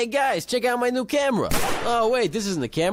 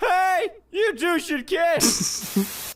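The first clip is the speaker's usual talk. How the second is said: put-on babyish voice, higher-pitched; 6 semitones higher than usual. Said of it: "a very severe case of baby voice".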